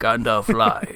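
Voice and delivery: grand, theatrical, declaiming stage voice. Reading a forum post aloud in a Sir Ian McKellen voice. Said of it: "your best Sir Ian McKellen voice".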